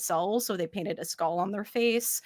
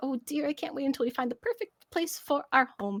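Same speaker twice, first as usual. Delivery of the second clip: excited, cuddly, lovestruck gush, high and quick; 6 semitones higher than usual. Voicing a newlywed beaver lady nuzzling her husband: excited, cuddly beaver bride. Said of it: "I was like".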